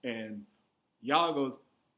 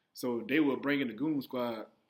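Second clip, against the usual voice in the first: normal talking voice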